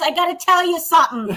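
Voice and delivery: Bronx accent impression.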